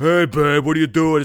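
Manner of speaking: loud, dopey, dim-witted put-on drawl. Mocking how someone says "hey babe", in a put-on dumb voice. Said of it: "saying babe in that dumb fucking voice".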